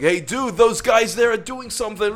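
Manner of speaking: put-on American accent, very high-pitched. Telling what he should have said: american accent. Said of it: "That's the best American accent".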